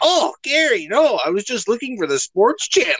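very high, wildly swooping cartoon voice. Retelling a cartoon scene, caught and making an excuse: SpongeBob voice. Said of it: "SpongeBob, like, fucking jumps, flicks the channel off and goes".

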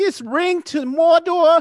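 put-on voice, very high pitched, loud and slow. Trading voices, doing a Hobbit line: Joe Pesci voice. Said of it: "that's my Joe Pesci".

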